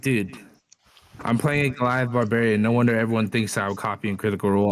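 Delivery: ordinary talk, nothing marked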